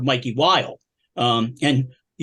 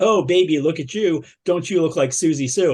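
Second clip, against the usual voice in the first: put-on snarky, taunting male voice. Retelling what a smoking man at a goth club said: imitating a snarky man. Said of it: "just being the snarkiest bastard on the planet".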